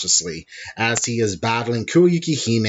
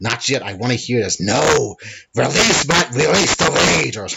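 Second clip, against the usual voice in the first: put-on growling creature voice; 4 dB louder than usual. Discussing a scene where Venom talks, speaker voices it: growly Venom voice. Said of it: "I'm trying to do a growly bean voice".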